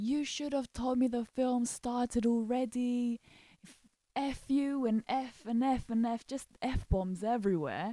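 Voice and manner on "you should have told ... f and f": mock angry, screaming, ranting outburst. Retelling an angry customer's words at the counter: imitating a customer screaming. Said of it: "he just started screaming at us".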